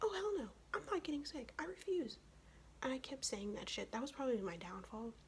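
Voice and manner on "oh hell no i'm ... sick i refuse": high, defiant tone. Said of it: "And I'm like".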